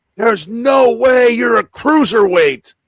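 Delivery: play-acted very high, shrill, loud scream. Retelling what a front-row fan yelled at the wrestler: imitating someone screaming.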